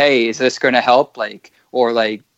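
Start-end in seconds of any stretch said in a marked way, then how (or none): 0.0-1.2 pleading, begging tone. Retelling asking doctors whether it will help: retelling own pleading. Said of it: "pleading with them".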